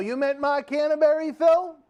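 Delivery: very high, loud yelling. Speaker suddenly working out who a text message meant, yelling. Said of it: "I don't know why I'm yelling".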